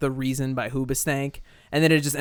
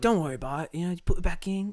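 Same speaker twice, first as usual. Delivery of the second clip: put-on sugary, sweet, gentle, kindly children's-show tone, pitched up; 5 semitones higher than usual. Asked to impersonate him on the kids show; imitating him being really nice. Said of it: "He's like really nice on that show".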